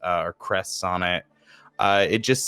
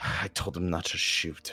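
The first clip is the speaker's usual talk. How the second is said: barely audible under-the-breath voice, quieter; 2 semitones lower, 8 dB quieter than usual. Voicing a character remembering her dead friend, said under her breath. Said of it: "she just says under her breath".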